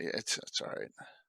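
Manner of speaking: soft, low whispered aside.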